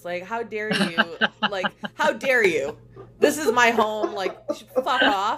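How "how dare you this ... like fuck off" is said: put-on annoyance, louder. Retelling how a sleeping homeless person reacted to the group's presence, mock-annoyed. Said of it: "very annoyed by our presence".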